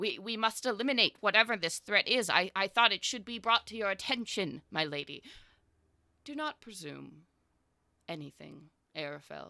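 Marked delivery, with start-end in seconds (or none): 6.2-9.5 rumbling god voice, quieter and slower. A deity answers Arafel's report of a threat, in a rumbling deity voice. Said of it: "the rumble of a deity's voice shakes your very bones".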